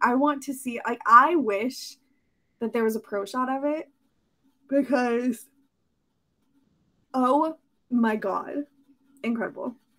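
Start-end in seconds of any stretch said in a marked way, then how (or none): 1.0-9.7 talking through a yawn. After talking for a long time, speaker keeps going while yawning. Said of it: "sorry, I'm yawning".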